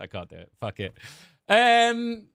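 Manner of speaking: ordinary talk, nothing marked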